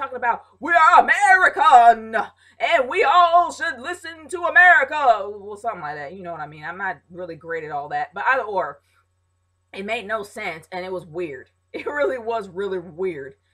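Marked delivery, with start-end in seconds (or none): 0.6-5.2 loud, booming Southern preacher voice. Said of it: "he sounded like a Southern preacher".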